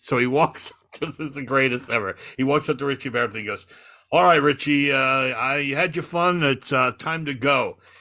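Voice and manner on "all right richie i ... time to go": put-on English accent, spoken more slowly. Retelling a story about Simon the bouncer, in Simon's English accent. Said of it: "Simon had an English accent".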